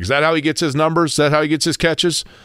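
ordinary talk, nothing marked

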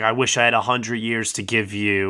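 ordinary talk, nothing marked

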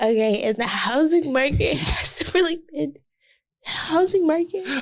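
laughing while talking, out of breath. Getting back on topic after joking around, laugh-talking and out of breath. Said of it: "whenever you like laugh talk, you run out of breath".

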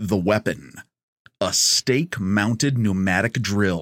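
low, slow movie-trailer voice. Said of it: "I'm gonna bring out my trailer voice".

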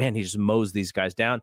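plain

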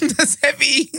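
slow, high, shocked laughter. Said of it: "Why am I laughing?".

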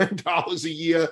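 amused delivery, laughing through the words. Speaker naming a yearly price they find ridiculous, laughing. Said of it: "I'm sorry that I'm laughing".

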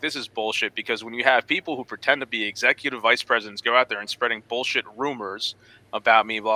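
ordinary talk

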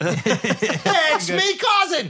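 very high attempt at an Australian accent. Retrying the Margot Robbie voice in an Australian accent: Margot Robbie impression. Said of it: "I don't know how to do Australian".

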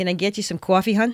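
put-on Philly accent. Quoting a South Philly diner waitress talking to West Coast cousins, in her Philly accent. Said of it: "saying in her Philly accent".

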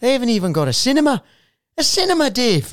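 put-on butchered Geordie accent. Retelling what a uni friend said: bad Geordie accent. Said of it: "I'm gonna bu-, butcher his accent".

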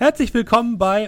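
very high, bright, cheerful calling out. Teenage shop boy rises from his chair to greet the customer, cheerful call-out. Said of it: "dich freudig anlächelt und ruft".

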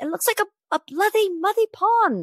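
bad Irish lisping voice. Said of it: "Let me get my best [name] on".

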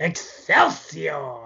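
swooping, sing-song exclamation with wide pitch swings. Closing the episode with an impression of Stan Lee: Stan Lee impression. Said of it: "you can probably do a better impression than I can".

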